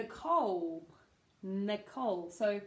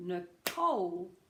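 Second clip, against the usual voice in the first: Nicole with stress on second syllable, -cole; 2 semitones lower than usual. Helping with tricky name pronunciation: stress on second syllable of nicole. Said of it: "you've got to put that stress on the second syllable".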